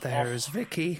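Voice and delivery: put-on imitation voice with clearly audible breathing. Showing others how to imitate a man's voice and get the breathing as well: impression with audible breathing. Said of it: "You've got to get the breathing as well".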